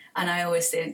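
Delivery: ordinary delivery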